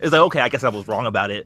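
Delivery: plain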